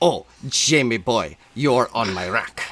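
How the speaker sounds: worst, terrible, put-on fake Spanish accent. Describing the clearly not spanish guy in charge, quoting him in worst fake spanish accent. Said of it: "doing the worst accent you'll ever hear".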